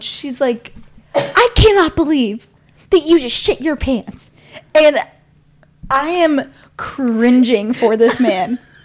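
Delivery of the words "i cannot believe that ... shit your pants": put-on angry, scolding yell in a woman's voice. Retelling how a stranger yelled at the man beside her, imitating a woman yelling. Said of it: "she is yelling out loud".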